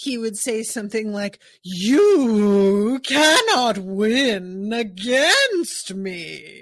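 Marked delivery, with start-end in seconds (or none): 1.6-6.6 loud, very slow, undulating drawl, stretched syllables. Imitating how he says the line in the sub, undulating, long, drawn-out delivery. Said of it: "that undulating, long, drawn out".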